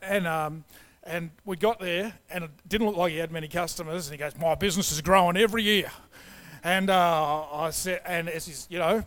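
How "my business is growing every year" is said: put-on broad ocker Australian accent. Speaker retelling what a business owner said, ocker Aussie accent. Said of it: "talked like a bit of an ocker Aussie guy".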